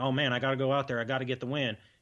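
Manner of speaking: put-on Texas accent. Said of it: "It's a good Texas accent".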